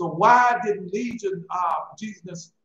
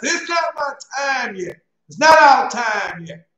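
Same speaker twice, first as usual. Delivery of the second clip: loud, drawn-out cry pitched high; 6 semitones higher, 7 dB louder than usual. Telling a story about a man in the street, retelling a loud cry. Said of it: "he cried out with a loud voice".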